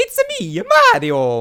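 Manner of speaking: loud, high cartoon voice with big pitch swoops. Answering a request for the best Mario voices: Mario voice. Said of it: "you're basically Charles Martinet's son".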